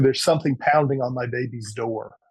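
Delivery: ordinary delivery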